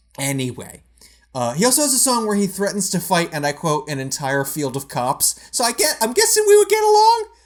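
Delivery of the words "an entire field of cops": ordinary talk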